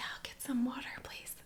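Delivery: whispered, hushed, soft and very quiet. Retelling ordering water, imitating own whispered reply. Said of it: "whispering back".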